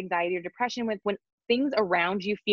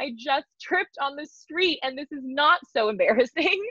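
fake, pitched-up laughing through the words; 6 semitones higher than usual. Showing how to manufacture joy after a mishap: fake laughing while talking. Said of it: "'cause I'm just laughing through it".

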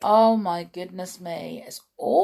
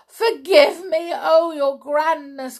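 high, miserable, wretched begging outcry; 9 semitones higher, 4 dB louder than usual. A narrator reads the miserable culprit's plea to the grand high witch, crying out. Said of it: "cried the miserable culprit".

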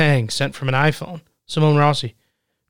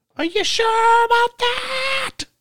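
very high-pitched scream, slow and drawn out. Quoting what the show host says: imitating Chris Hansen screaming. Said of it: "And he screams it".

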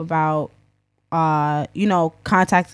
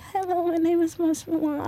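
very high, soft, timid, trembling voice; 11 semitones higher, 6 dB quieter than usual. Recalling being very shy and timid when meeting people: imitating own past trembling voice. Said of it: "I was still trembling in my voice".

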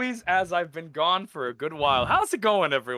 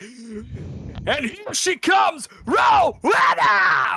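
very drawn-out, loud, very slow wrestling announcer voice; 6 semitones higher, 5 dB louder than usual. Showing a WWE-style introduction for the guest Rowena: WWE announcer voice. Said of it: "W W E shit".

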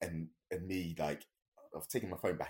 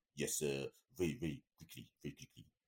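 slipping into a put-on French accent; 3 semitones lower than usual. Retelling what a footballer said when asked for a picture: imitating Thierry's French accent. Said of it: "in my best sort of version of his French accent".

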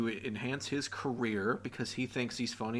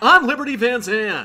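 put-on shrill, over-the-top girl voice, high and blasting; 11 semitones higher, 15 dB louder than usual. A podcast host introduces herself in character, doing a Liberty Van Zant voice. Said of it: "She's so over the top".

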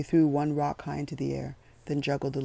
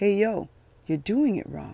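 loud, high yell, calling out; 6 semitones higher, 5 dB louder than usual. Eddie yells over at the guard: yelling. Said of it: "Eddie was already yelling at the guard".

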